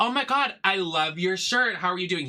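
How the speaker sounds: nasty, fake-gushing, insincere, not-genuine tone. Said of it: "just being so nasty".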